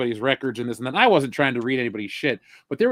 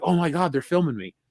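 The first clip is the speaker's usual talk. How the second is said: put-on panicked voice, higher; 3 semitones higher than usual. Retelling a coworker's reaction to the prank call, imitating someone freaking out. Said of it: "freaked out".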